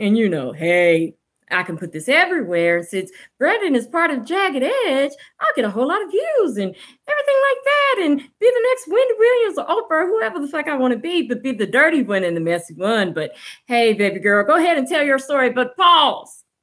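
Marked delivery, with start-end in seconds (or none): 0.5-15.5 honeyed, disarming, soft put-on gentle delivery. Mocking an interviewer's imagined thoughts about a guest, mock soft voice. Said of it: "I'm talking in this soft voice".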